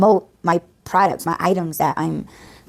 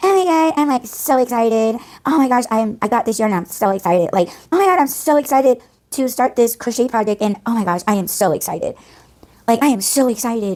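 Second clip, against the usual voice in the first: mock exaggerated gushing excitement, pitched up; 5 semitones higher than usual. Mocking girls who crochet on YouTube, imitating their over-the-top excitement. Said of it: "they're so over the top with it".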